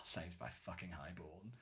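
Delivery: very soft sarcastic grumble under the breath. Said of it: "And I was like".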